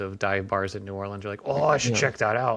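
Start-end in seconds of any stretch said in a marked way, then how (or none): 1.5-2.6 mock drunk talk, higher and louder. Imitating drunk people in dive bar bathrooms: imitating a drunk person. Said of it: "completely plastered in the dingy bathrooms".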